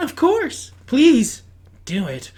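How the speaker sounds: sweet, ladylike, feminine talking-appliance voice. Voicing a talking fridge agreeing to a request: sweet feminine fridge voice. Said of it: "That same sweet feminine voice definitely coming out of the fridge".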